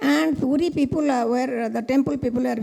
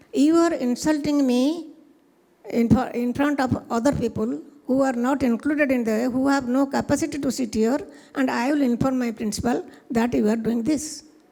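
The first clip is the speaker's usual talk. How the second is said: ordinary delivery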